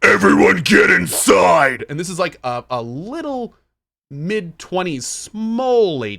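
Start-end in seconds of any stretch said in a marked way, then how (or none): 0.0-1.8 very loud, harsh, rough, demon-like bellow. Retelling what a teacher yelled at the group: a loudest-possible yell. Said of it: "yelled at us in the loudest voice possible".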